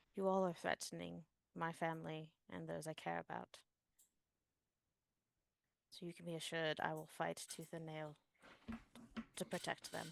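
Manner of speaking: intimate, leaning-in stage half-whisper. Speaking in character to a character pulled in close: half-whispering in her ear. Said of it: "whisper this in her ear and say".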